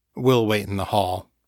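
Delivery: ordinary delivery, nothing marked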